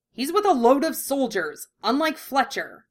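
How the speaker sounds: sharp snapping tone. Narrator reads a character answering a mocking companion, snapping. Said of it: "Ed snapped".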